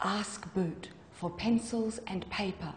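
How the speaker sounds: soft, hushed whisper, hard to hear. A spoon speaks to the narrator, who bends close over the stew, whispered. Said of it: "Spoon whispered".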